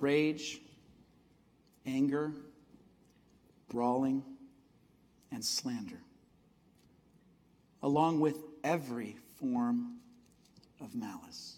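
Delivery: slow deliberate reading, long pauses between phrases.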